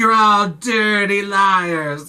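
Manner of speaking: intense, drawn-out accusing voice. Retelling a film scene where a man accuses little girls: imitating an intense accusation. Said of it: "he's, like, so intense".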